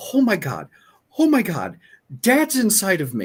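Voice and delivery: mock very high, quavering, swooping outburst. Retelling a sister's reaction at the table: imitating someone shaking. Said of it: "she starts shaking, and she goes".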